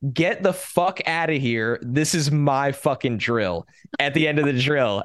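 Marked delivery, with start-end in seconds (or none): 0.1-3.6 mock screaming. Retelling a player's outburst after winning a goal line drill: imitating someone screaming. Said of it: "he's just screaming".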